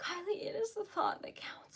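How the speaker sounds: overwhelmed, soft, hushed whisper.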